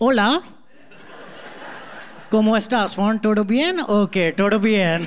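Spanish spoken with an Indian accent. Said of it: "speaking Spanish in an Indian accent".

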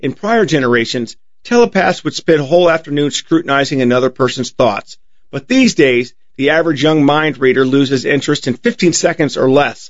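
plain

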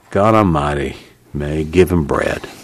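low, gruff, growling, forceful voice. A narrator reads Al's line as he speaks from behind May; growling. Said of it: "Al growled".

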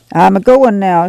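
ordinary delivery

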